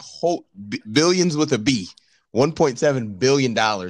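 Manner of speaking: ordinary talk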